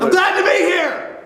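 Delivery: mild, half-yelled, shouty voice. Special guest [name], just introduced on the show, greets the hosts: yelling. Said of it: "why are you yelling?".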